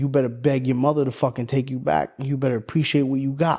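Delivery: mock mean, harsh scolding tone. Retelling a call where he scolded, imitating someone being mean. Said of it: "he was a mean motherfucker".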